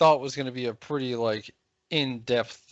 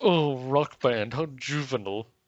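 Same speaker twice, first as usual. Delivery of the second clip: put-on snooty, haughty voice. Mocking a writer's article with a snooty voice. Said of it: "do a snooty voice".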